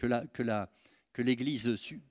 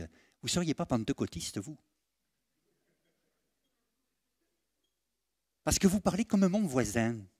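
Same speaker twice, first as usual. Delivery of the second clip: put-on light southern French accent; 4 semitones higher than usual. Retelling what a colonel said to him, in a slight southern French accent. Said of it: "il avait un petit accent du sud comme ça".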